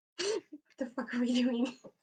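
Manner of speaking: stage whisper, loud. Player peeking out a door, calling to two companions, loud whisper. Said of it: "start like loudly whispering".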